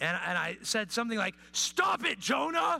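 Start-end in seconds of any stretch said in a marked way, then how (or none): 1.5-2.8 very high, rough, raspy scolding yell. Speaker reenacting what they said to Jonah back then, retelling an angry shout. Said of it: "Like that, probably, maybe a little louder".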